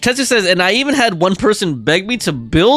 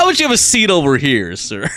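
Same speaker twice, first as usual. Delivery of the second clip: animated TV host voice with swooping pitch; 5 semitones lower than usual. Joking about a show, imitating Chris Hansen. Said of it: "Chris Hansen might want to do an interview".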